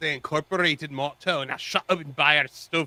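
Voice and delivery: poor, put-on, bad Scottish accent. Reading out a viewer's message: bad Scottish accent. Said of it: "Probably the worst Scottish accent I've ever done".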